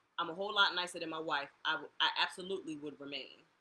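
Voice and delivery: ordinary delivery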